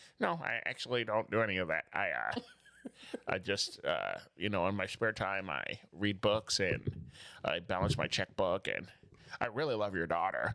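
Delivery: mechanical, robot-like voice, pitch dropped. Retelling a contestant's answer to his girlfriend's dad: imitating robotic talk. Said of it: "he talked like a robot".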